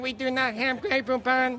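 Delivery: mechanical, flat monotone robot voice. Joking to an audience about a self-driving Rolls Royce answering a passenger: robot voice. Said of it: "That's my robot voice".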